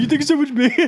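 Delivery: put-on high, childlike little kid voice. Imagining how he said it while play-wrestling, in a kid's voice. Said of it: "a kid's voice too".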